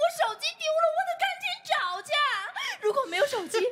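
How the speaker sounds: high-pitched, fast, sobbing, crying wail. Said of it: "别哭了".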